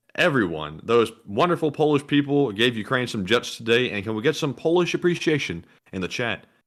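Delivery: ordinary delivery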